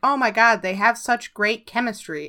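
ordinary talk, nothing marked

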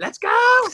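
play-acted shrill, very high-pitched, loud scream. Joking about a coworker, imitating a coworker screaming. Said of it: "a certain creature we work with screaming".

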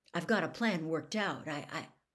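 ordinary delivery

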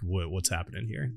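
put-on confusion. Retelling a story, voicing a woman's reaction after she introduces herself: acting out confusion. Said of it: "she's like confusedly like".

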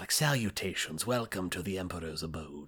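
gentle fantasy character voice. Discussing the word 'salutations', showing how a character might say it: fantasy character voice. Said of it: "a fantasy character".

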